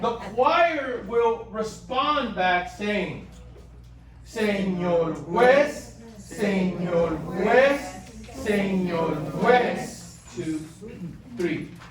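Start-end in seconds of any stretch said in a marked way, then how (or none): 4.3-10.2 very slow, drawn-out reading. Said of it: "I'm gonna read it slowly now".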